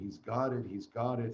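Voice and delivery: ordinary talk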